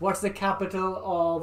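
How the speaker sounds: normal talking voice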